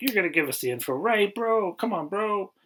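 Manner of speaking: friendly, bro-style coaxing. Retelling how he questions a prisoner: imitating friendly chatting up. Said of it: "chatting him up like".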